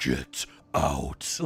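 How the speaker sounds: horrendous, very low demonic voice. Retelling a film scene, a man in a fly-covered room hears: horrendous demonic voice. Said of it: "he just hears this horrendous demonic voice saying".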